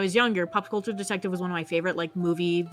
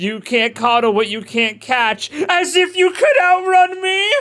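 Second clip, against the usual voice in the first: yelled, much louder and higher; 8 semitones higher, 10 dB louder than usual. Voicing a vampire character taunting a foe, yelling. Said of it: "why I yelled that".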